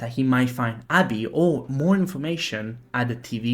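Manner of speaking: ordinary delivery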